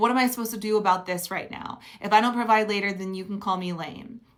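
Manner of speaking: usual speaking voice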